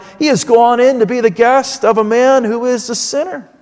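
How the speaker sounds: usual speaking voice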